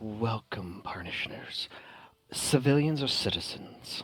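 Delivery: soft, hushed, church-quiet whisper. A game master voices a Tabaxi greeting the players, in a soft quiet church voice. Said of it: "in a very nice church quiet voice goes".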